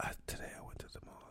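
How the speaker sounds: soft, breathy, barely-there whisper. Showing another speaker how to earn money online: whispering. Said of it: "Just whispering".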